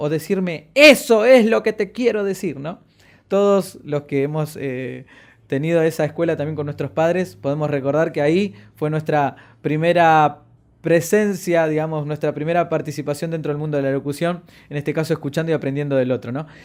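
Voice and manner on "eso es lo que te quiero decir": loud, high, emphatic scolding tone. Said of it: "hacía uso del énfasis".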